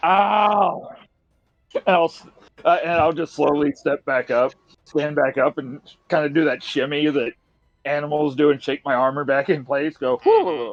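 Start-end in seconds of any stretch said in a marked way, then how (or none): 0.0-1.0 loud, pained "ow", much higher. Lying there for a second as everyone stares, a very audible ow. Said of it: "just go very audibly".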